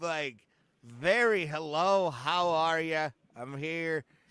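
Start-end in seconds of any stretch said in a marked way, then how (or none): 1.5-4.0 slow, working-class sounding voice. Describing how a comedian talks, imitating Adam Carolla's blue collar voice. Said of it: "He's got a blue collar voice".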